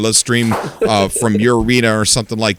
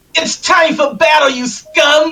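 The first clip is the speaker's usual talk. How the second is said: very high, enraged, furious war cry; 3 dB louder than usual. Urged by a friend to put emotion into the line: angry battle cry. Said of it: "Method act".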